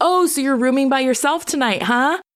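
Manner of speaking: mock loud announcing voice. Retelling a man at the counter handing over a key, imitating him talking loud. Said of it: "He's talking really loud".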